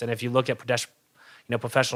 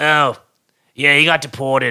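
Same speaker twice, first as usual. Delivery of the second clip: put-on raspy voice, higher and louder; 3 semitones higher, 9 dB louder than usual. Retelling a coworker's reply to a customer: imitating Justin's raspy voice. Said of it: "he's got this, like, really raspy voice".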